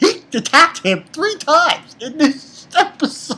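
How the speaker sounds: laughing through the words. Reviewing an episode of a show, laughing while talking. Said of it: "I'm sorry I'm laughing about this".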